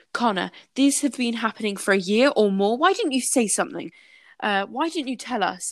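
reproachful, accusing, pressing tone. Quoting a woman's account of confronting someone, retelling a raised voice. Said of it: "My eyes narrowed and my voice got louder".

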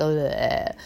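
weary groan, low in pitch. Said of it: "when you're really tired and you're just like".

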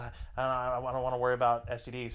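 normal talking voice

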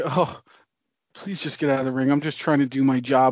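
mock begging, pleading voice. Retelling how the ref stood in the ring, imitating a begging ref. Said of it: "the ref sitting there begging".

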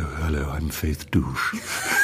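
deepened, softened, very slow woman's voice. Recalling a man watched since age ten, the speaker imitates his deepened woman's voice. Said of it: "he usually deepened his voice".

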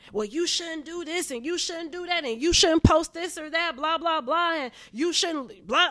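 put-on yelling. Retelling a friend's outburst, the speaker imitates her yelling at them. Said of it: "You're yelling at me".

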